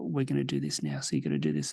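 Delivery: very low, gentle, soft, hushed voice. Explaining a circuit to a group sitting around you, soft voice. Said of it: "softly talk to them and be like".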